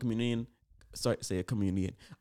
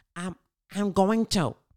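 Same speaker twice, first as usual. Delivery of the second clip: put-on little voice, much higher pitched and slower; 7 semitones higher than usual. Reenacting the incident, the speaker voices Chris Rock's little voice. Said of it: "I just hear this this little voice".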